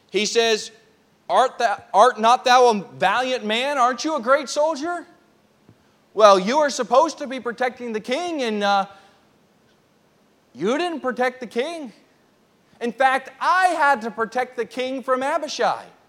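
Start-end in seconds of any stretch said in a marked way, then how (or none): 1.3-15.8 mocking, needling, dripping with sarcasm. Retelling David challenging Abner for not protecting the king: sarcastic challenge as David. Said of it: "he's challenging Abner".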